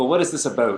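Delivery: teasing, exaggerated mock Canadian accent. Teasing the other speaker by copying how she talks at table reads, exaggerated canadian accent. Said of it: "she's like".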